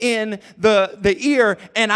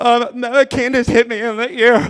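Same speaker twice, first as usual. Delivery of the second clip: acted crying, tearful voice. Retelling answering his dad as a small boy, imitating his own crying. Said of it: "a girl hit you in your ear, you crying".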